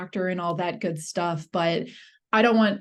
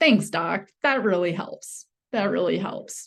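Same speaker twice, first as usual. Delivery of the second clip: mocking, sarcastic, fake grateful tone. Thanking a doctor for useless advice to eat more fiber: sarcastic fake thanks. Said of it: "I'm being sarcastic".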